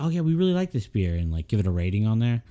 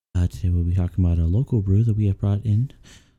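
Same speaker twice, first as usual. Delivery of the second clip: sleepy public-radio announcer voice, lower pitch; 2 semitones lower than usual. Podcast hosts joke about doing an intro for their show, NPR host voice. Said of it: "it's going to put you to sleep".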